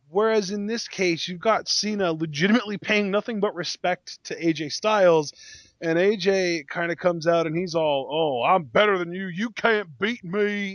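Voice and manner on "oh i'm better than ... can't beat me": put-on Georgia accent. Describing AJ Styles talking to Cena, imitating him in his Georgia accent. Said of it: "in his Georgia accent".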